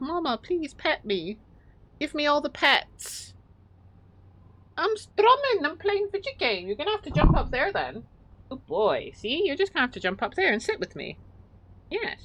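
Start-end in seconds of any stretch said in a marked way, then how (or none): 0.0-3.3 put-on begging cat voice, much slower. Playing a video game, the speaker voices her cat: voicing the cat begging. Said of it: "putting his little paws up like".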